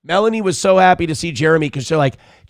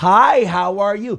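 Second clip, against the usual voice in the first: put-on very slow, high, condescending kid-talk; 5 semitones higher than usual. Mocking people who can't talk to kids: imitating talking down to a kid. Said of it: "so they talk to ten-year-olds with".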